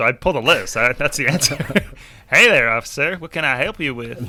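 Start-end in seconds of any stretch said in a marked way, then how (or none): 2.3-4.3 bad, fake, put-on southern American accent. Speaker shows what they usually do with an officer, put-on Southern accent. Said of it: "put a southern accent on".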